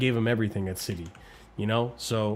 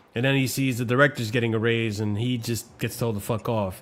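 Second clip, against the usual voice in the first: plain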